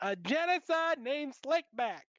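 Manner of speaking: very high, slow put-on voice. Quoting a line as a Katt Williams impression. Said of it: "It's just Cat Williams' voice".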